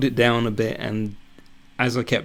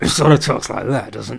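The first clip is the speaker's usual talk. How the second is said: gruff put-on voice, louder; 6 dB louder than usual. Trying out a character's voice for future animated work, gruff character voice. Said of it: "Is it as gruff as that?".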